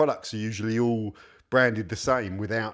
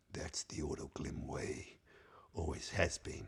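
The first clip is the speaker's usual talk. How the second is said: hushed, breathy, whispered movie trailer announcer voice; 7 semitones lower, 16 dB quieter than usual. Reviewing a product's label, the speaker reads its slogan in a movie trailer voice. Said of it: "I'm going to go into that movie trailer voice".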